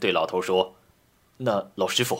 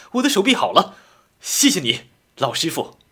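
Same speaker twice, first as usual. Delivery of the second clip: amazed, delighted, overjoyed, very high, loud cry; 9 semitones higher, 7 dB louder than usual. A driver finds his right arm can move again and thanks the old master, surprised and delighted. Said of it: "他又惊又喜道".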